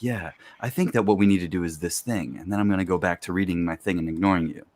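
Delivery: unbothered, steady, really calm and even delivery. Describing how a character talks, imitating a really calm voice. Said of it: "he speaks in a really calm voice".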